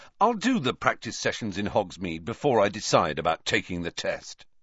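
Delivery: ordinary delivery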